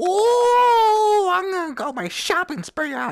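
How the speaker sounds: overexcited, very high, drawn-out oh. Bam answers a girl's idea, and another character tells her to calm down; overexcited. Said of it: "Bam, calm the hell down".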